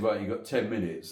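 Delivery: plain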